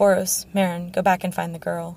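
ordinary talk

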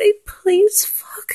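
mock whimpering, high-pitched and needy.

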